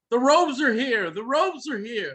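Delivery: loud calling out. A guard turns and bangs on the door, yelling to those inside.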